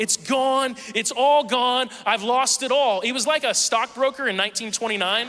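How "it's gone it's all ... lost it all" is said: play-acted, high-pitched hysterical child-like yelling. Retelling how someone lay on the floor yelling, imitating them hysterical. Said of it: "he's hysterical".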